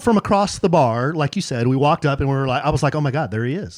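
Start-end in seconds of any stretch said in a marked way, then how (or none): none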